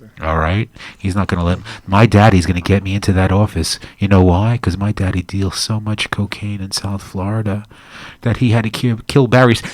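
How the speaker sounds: hushed voice. Telling a conspiracy theory to two listeners: whispering. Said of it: "why you were whispering that whole time".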